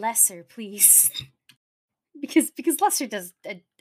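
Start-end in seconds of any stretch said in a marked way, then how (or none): 0.0-1.1 put-on whispering. Recounting a whispered request during the game, retelling own whisper. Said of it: "My dumbass was like whispering".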